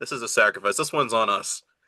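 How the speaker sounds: normal talking voice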